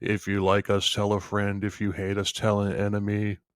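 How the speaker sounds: flat, deadpan, droning one-note monotone. Answering a listener who called the show monotone: mock monotone delivery. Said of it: "That's monotone".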